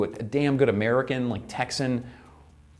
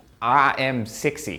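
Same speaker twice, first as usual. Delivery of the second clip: put-on South African accent with strong sounds; 3 dB louder than usual. Accent practice, repeating a phrase after the coach in a south african accent. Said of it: "That's a good South African".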